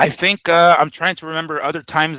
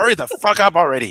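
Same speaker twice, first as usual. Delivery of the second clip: acted angry father voice, fed up, losing patience; 2 semitones higher than usual. Acting out a dad hurrying trick-or-treating kids: imitating an angry dad. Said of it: "'cause dad's gonna be pissed".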